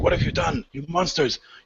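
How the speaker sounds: panicked, frantic, accusing, freaked-out cry. Voicing a character who is freaking out. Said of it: "so he's freaking out".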